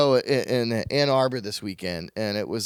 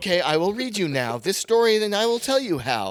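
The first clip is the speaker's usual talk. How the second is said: very high, mechanical robotic voice; 10 semitones higher than usual. Retelling how a man read a story to his daughter, in a robot voice. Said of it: "It's a robot voice".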